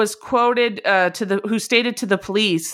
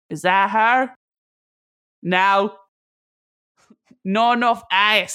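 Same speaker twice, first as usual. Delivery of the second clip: put-on Australian accent, very slowly drawled. Imitating a man checking women, praised by the others: Australian accent. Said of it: "That's my Australian".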